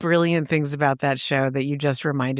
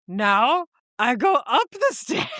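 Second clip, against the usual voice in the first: put-on fuzzy monster voice, higher pitch; 9 semitones higher than usual. Retelling a Muppet Masterpiece Theater episode in the Grover voice. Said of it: "the Grover voice".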